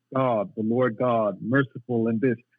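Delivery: ordinary talk, nothing marked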